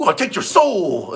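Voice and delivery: high, energetic, lively delivery. Doing an impression for a viewer's request: energetic Jeff Hale impression. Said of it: "Do a Jeff Hale impersonation before a match".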